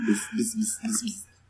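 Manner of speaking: very soft whispered buzzing "bis" sounds.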